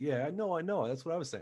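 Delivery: slight, affected, put-on New York accent. Retelling how they talk to an intimidating dude: imitating own slight put-on New York accent. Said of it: "I'll start putting on, like, a little bit of".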